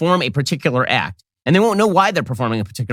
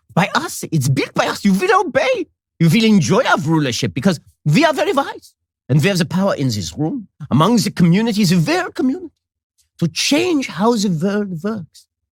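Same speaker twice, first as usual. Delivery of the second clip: high, mock thick German accent. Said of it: "He also said this with a very thick Germanic accent".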